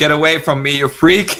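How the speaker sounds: put-on mild, held-in half-shout. Retelling a movie scene of a character escaping down a corridor: imitating someone yelling.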